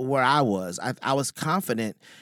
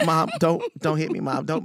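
put-on comic begging with swooping pitch; 4 semitones higher than usual. Retelling a talk with his mom, joking: mock pleading with mom. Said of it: "it's really more like".

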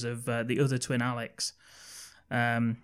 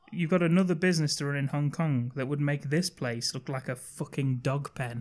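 usual speaking voice

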